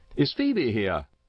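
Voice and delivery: keen, eager, insistent, pressing tone. A man at the door, asked why he came, demands eagerly. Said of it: "he demanded eagerly".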